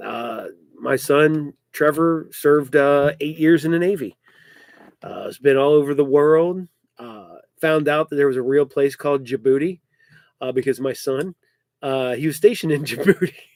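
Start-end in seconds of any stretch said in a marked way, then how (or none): 12.2-13.3 words broken up by laughter. Telling where a son was stationed, laughing while saying Djibouti. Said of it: "I cannot say that without laughing".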